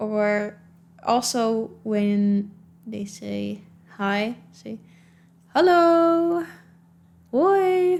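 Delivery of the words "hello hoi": higher-pitched singsong intonation. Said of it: "We do kind of sing".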